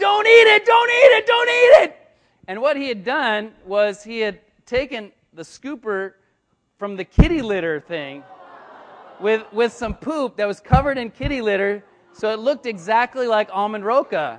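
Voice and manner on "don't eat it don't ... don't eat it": shrill, very loud, high-pitched screaming. Retelling how a friend suddenly started screaming: imitating someone screaming. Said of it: "suddenly he starts screaming".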